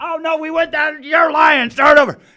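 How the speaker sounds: acted shrill, very high, loud shrieking yell. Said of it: "he's screaming at me".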